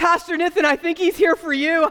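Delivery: high, giggly blurt, put-on laughter throughout. Retelling what someone blurted out while waiting in line: imitating someone laughing while talking. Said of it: "as she's laughing, blurts out".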